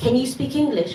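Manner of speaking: ordinary delivery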